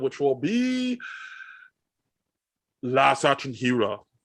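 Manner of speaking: terrible put-on Austrian accent, very slow and drawn out. Signing off to listeners, announce the next episode in a terrible Arnold Schwarzenegger impression. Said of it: "That was a good Arnold. That was terrible, Arnold Schwarzenegger".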